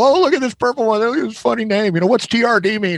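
put-on very high, giggly girlish chatter. Retelling how Kathy looked over fishing baits: imitating Kathy as a giggly girl. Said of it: "she goes from being this giggly girl".

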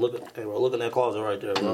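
ordinary talk, nothing marked

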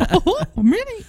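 very high-pitched cartoon-mouse voice. Mocking a movie character who sounds like Mickey Mouse: Mickey Mouse voice. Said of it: "That's what he sounds like half the time".

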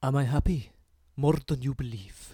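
put-on Spanish-accented voice. Told which sentence to say in your impression, repeat it in a Pep Guardiola voice. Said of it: "in your Pep Guardiola voice".

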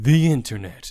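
loud, dramatic, epic movie-trailer announcer voice. Co-host introducing today's discussion topic in a dramatic trailer voice. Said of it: "This is a dramatic trailer voice".

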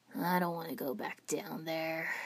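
with a sigh. A boy speaks while glancing at a companion, with a sigh. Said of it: "Sasuke said with a sigh".

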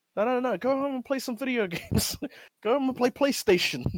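mock very high, exasperated voice, on the edge of snapping. Retelling a mayor ordering ping pong players home: imitating a mayor about to lose it. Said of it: "he's about to lose it".

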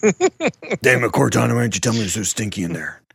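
loud, swooping, angry, fed-up outburst. Joking about Master Chief on the phone: angry Master Chief voice. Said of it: "He comes out all pissed".

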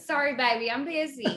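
put-on Texas accent. Imagining another guest busy cooking gravy, in a full Texas accent. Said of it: "with a full Texas accent".

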